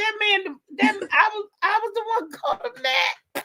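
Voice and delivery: laughing shocked realization. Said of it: "I said".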